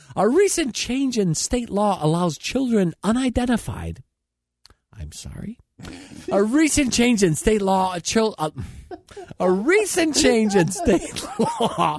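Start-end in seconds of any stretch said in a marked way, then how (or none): 9.4-12.0 higher pitch, laughing through the words. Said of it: "it's not funny".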